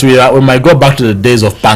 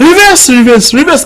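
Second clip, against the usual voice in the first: high, panicked shouts. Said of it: "started shouting".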